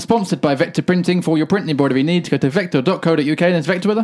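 rushed, sped-up, rattled-off delivery. Podcast host reading the sponsor message: sped-up sponsor read. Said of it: "Did that sped up".

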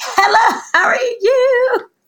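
very high, loud, upbeat cheery tone, you stretched. Recalling answering the boss's call on a good day, retelling a cheerful greeting. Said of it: "if I'm having a good day".

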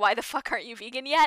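ordinary talk, nothing marked

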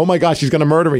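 normal talking voice

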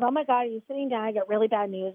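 normal talking voice

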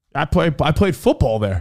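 usual speaking voice

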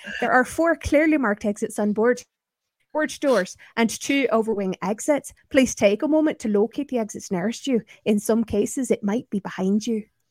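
full, thick Scottish accent. A former flight attendant recreates his onboard announcements, in a full Scottish accent. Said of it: "I used to do all my announcements in a full Scottish accent".

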